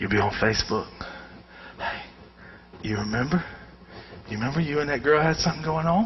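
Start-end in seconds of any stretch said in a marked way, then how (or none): 1.8-6.1 mock devil whisper, lower and quieter. Acting out the devil's reminder while on Facebook: imitating the devil whispering. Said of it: "He just whispers it".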